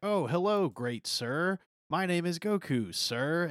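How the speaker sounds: high, very slow, stiff, forced politeness. Recapping a scene where Goku is scolded and reintroduces himself, imitating Goku forcing politeness. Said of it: "trying to be really respectful".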